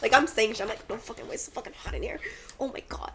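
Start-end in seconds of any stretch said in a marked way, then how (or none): 0.9-3.1 play-acted, breathy, angry, annoyed whispered griping. Retelling how she complains when it's hot: imitating herself pissed off. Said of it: "When I'm hot, I'm, like, pissed".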